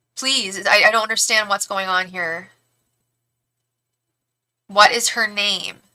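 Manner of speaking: frustrated, exasperated voice. Asking Matt for a name nobody can find, getting frustrated. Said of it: "I'm getting frustrated".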